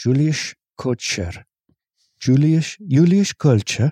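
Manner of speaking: imitated Dutch accent. Reading out a person's name as they requested, in a dutch accent. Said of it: "this person wants their name in a Dutch accent".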